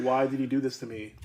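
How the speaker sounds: normal talking voice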